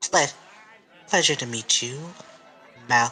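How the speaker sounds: affected, forced, fancy high-class manner. Voicing a secretary character meeting someone: forced fancy manner. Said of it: "she is trying to put on an air of being fancy".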